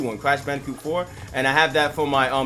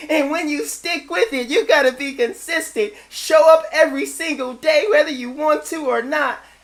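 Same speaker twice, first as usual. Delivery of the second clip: put-on girlish voice, higher and louder; 13 semitones higher, 5 dB louder than usual.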